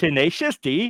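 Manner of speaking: high, not-great put-on Swedish accent. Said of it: "That's my Swedish accent".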